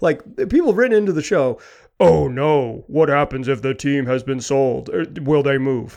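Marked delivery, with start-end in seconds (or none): 2.0-6.0 grave, very serious, businesslike tone. Voicing people who wrote into the show, in a serious business person voice. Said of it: "That's your very serious business person voice".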